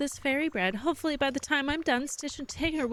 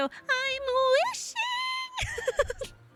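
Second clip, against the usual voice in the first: very high pitch, kept tight in the throat. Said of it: "very high-pitched voice and then have everything is kinda stay in your".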